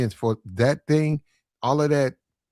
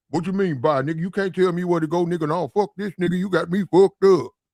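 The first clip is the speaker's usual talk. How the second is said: mock tough-guy bluster; 4 semitones higher than usual. Retelling a confrontation, retelling acting like a tough guy. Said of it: "started acting like I was a tough guy".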